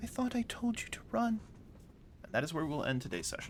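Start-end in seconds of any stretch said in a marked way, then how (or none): 0.0-1.4 high, croaky, hoarse whispered voice. Narrator voicing the sickly girl the players saw, Alicia's croaking hoarse whisper. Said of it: "in a very croak, hoarse whisper of a voice".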